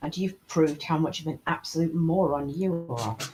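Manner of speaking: quiet murmur, muttered under the breath to oneself. Playing a character answering another character's praise, muttered under breath. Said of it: "Under my breath".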